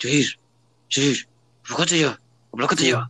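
put-on speech through gritted teeth. Describing how parents scold a kid, the speaker imitates them, imitating talking through gritted teeth. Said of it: "entre dientes como que".

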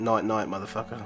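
whispering. Voicing a character speaking into a fallen skeleton's ear: whispering into his ear. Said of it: "Whisper into his ear".

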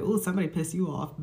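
ordinary talk

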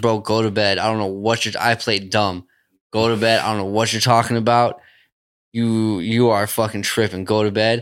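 ordinary delivery

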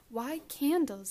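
protesting. Daisy questions the candles on the porch table, objecting. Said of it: "objected Daisy, frowning".

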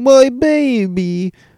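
put-on high sobbing wail, "baby" drawn out. Recounting a favorite episode's coffin scene, imitating Leland crying. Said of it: "he's crying and saying".

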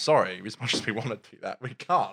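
ordinary talk, nothing marked

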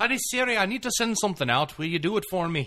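Irish accent, pitched very high. Showing how you must talk to Irish Siri: Irish accent. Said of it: "you need to have an Irish accent".

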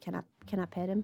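quiet, soft, under the breath. A game narrator voices a character turning back to the player, quietly. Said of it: "And then quietly goes".

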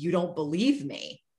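acted hurt voice, cracking and tearful. Retelling a tearful movie line: imitating a breaking voice. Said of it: "Her voice just, like, breaking".

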